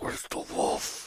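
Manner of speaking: very quiet, hushed, secretive whisper. Telling a story, the speaker acts out what a man said: retelling a whisper. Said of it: "He kind of whispers".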